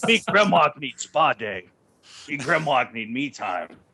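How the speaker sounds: put-on caveman creature voice. Joking about a grandma carrying baby Dinobots, in caveman-talk Dinobot grandma voice. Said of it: "carrying baby Dinobots like".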